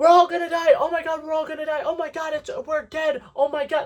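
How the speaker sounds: play-acted shrill, very high-pitched screaming. Retelling a scene where Dustin discovers a wormhole: imitating Dustin screaming. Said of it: "and screaming".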